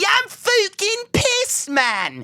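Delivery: put-on fook accent on fucking, swooping. Comic mocks people who say fook instead of fuck, mocking someone saying fook. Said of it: "Did you just say fook?".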